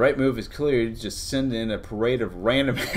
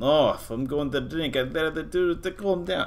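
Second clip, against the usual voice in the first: clumsy, bad, fake put-on Russian accent; 5 semitones higher than usual. Voicing a russian man deciding whether to drink from a flask, bad russian accent. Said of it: "My Russian accent is still terrible".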